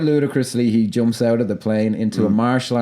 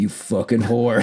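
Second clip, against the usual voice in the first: mock deadpan, dead flat delivery. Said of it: "he just dead".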